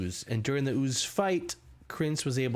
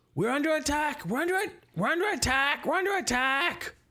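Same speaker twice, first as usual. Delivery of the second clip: very high, repeated, alarmed yelled shout; 13 semitones higher than usual. Voicing a fleeing character raising the alarm: Krentz yelling an alarm. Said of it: "you hear him yelling".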